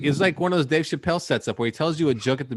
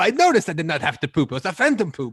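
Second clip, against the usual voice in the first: mock henchman voice, higher; 4 semitones higher, 3 dB louder than usual. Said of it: "What the fuck accent is that?".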